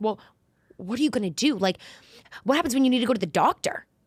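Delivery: put-on fretting, anxious, worried mother voice. Retelling a mother's reaction to moving away: imitating anxious mom. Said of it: "my mom always has so much anxiety".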